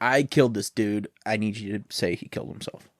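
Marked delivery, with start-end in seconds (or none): none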